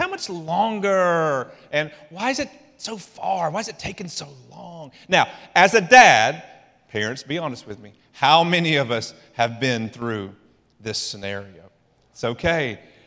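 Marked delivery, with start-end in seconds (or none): 0.0-4.9 mock-whiny, put-on whining voice. A parent acts out back-seat questions on a long drive, mock-whiny voice. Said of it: "you got to do that whiny voice".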